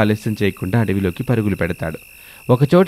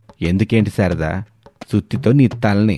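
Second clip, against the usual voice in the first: plain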